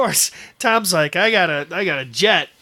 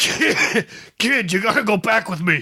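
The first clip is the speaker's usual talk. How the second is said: put-on elderly man character voice; 3 semitones higher than usual. Joking about a book crossover, doing Old Man Biff. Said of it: "That's my Old Man Biff".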